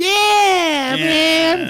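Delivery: whiny, very high voice, "man" drawn out. Describing how someone's voice sounds by imitating it: whiny Duncan Trussell voice. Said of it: "whiny voice".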